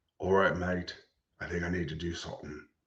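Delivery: hopeful, low, put-on movie-star celebrity voice. Answering a question about what they're doing: Idris Elba impression. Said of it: "Give it my best Idris Elba".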